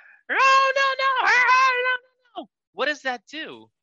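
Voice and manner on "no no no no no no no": repeated high, loud screaming. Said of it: "is screaming".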